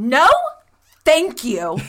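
sassy, sing-song, dismissive tone. Retelling standing up out of the booth away from him, mock hands-on-hip refusal. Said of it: "hands on my hip, and I go".

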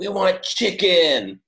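acted yelling. Retelling how the characters revolt in the movie: imitating characters yelling. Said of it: "they all start yelling".

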